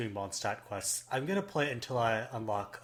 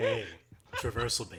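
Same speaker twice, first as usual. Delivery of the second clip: silly, over-the-top, sultry seductive voice; 3 semitones lower than usual. Recording a name to edit into their show, a speaker tries a seductive voice. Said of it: "we don't need to do the seductive voice".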